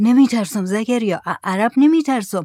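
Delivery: ordinary delivery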